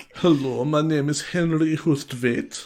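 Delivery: caricatured, flamboyant German accent. Trying out accents in conversation, do a flamboyant German caricature. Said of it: "real caricature of a flamboyant German".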